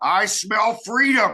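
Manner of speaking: booming, loud, rowdy, boisterous yell. Showing what the speaker yells on smelling someone smoking marijuana, loud, boisterous yell. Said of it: "yell in a very loud, boisterous voice".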